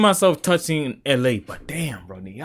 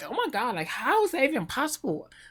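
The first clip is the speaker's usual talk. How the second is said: put-on annoying girl voice, very high pitched; 10 semitones higher, 7 dB quieter than usual.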